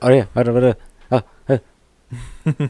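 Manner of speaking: put-on fast, short, clipped speech. Imitating a friend who talks fast in short sentences: imitating Abel talking fast and short. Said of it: "he talks fast and short".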